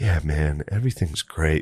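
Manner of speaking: dead-level, toneless, flat, droning monotone. Speaker recalls Butterly talking while the speaker was hallucinating, imitating Butterly's monotone. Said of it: "this real monotone thing".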